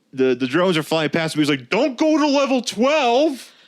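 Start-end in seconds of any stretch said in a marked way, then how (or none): 1.7-3.5 play-acted, very high, slow, drawn-out yell. Retelling a scene where a character calls out: imitating someone yelling. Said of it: "he's yelling this out loud".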